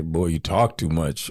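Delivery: put-on deep voice. Remembering a man who has died and quoting his teasing: imitating a deep voice. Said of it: "he had a really deep voice".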